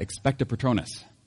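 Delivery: normal talking voice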